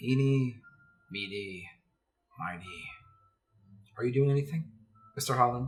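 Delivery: deep, thick, guttural, raspy voice. Voicing a stranger taunting Mister Holland: deep guttural raspy voice. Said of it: "It is a deep, guttural, raspy voice".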